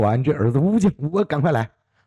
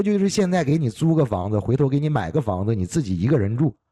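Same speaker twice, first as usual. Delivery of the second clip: usual speaking voice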